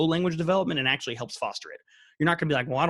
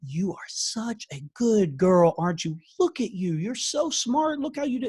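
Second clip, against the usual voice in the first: exaggerated, high baby talk with rising pitch; 7 semitones higher than usual. Explaining child-directed speech, the speaker demonstrates praising a child in high-pitched baby talk. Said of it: "We use that higher-pitched voice".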